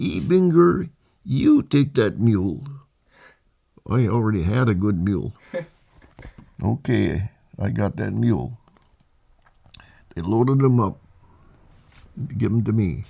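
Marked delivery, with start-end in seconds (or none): 0.0-2.6 squeaky, high voice, drawn out slowly. Retelling an order his corporal gave him about a mule: squeaky voice of Corporal Clements. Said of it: "He's got a real squeaky voice".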